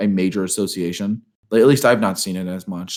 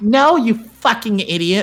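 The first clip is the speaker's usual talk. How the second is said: furious, very high-pitched angry shout; 14 semitones higher, 4 dB louder than usual. Reading a story aloud, the narrator shouts back at the other character: angry shout. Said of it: "I shouted".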